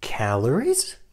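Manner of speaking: calories with rising question-like pitch. Introducing today's topic with a question mark on the end: rising intonation on calories. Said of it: "with upward intonation like this".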